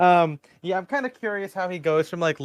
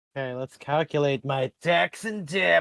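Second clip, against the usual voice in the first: ominous, menacing, threatening tone. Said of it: "you s- said that very menacingly".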